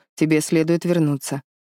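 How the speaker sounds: ordinary delivery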